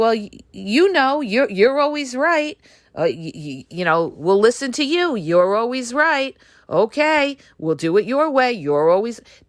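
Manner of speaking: high, condescending, halting, patronizing placating tone. Imitating a narcissist agreeing with you: imitating a patronizing partner. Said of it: "they're patronizing you".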